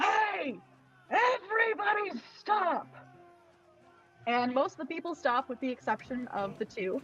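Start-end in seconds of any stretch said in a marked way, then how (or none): 0.0-2.9 huge, very high, booming bellow. A mad man turns around and yells out to the bar: big booming yell. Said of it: "in a big booming voice, he just yells out".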